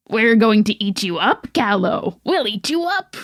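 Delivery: put-on taunting goblin creature voice. Telling a story where goblins taunt a girl, in a goblin voice. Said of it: "I'm gonna do a goblin voice".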